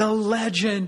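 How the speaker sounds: put-on hollering, high and carrying. Speaker reminds Dave how Dave greeted him across a parking lot, imitating him shouting. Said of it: "He's shouting across the parking lot".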